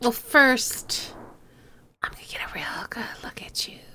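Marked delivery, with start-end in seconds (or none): 2.0-3.8 sinister, creepy, breathy, hushed whisper. Answering a challenge to open a lock: creepy delivery. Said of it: "I have to say it that way because it's kind of creepy".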